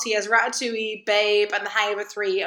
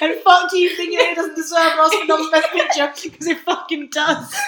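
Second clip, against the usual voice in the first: fervent, spitting, loud, impassioned, outraged rant; 7 semitones higher, 6 dB louder than usual. Defending a film after the other speaker doubts its Oscar nomination: put-on passionate outrage. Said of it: "I'm so passionate, I'm spitting in the microphone".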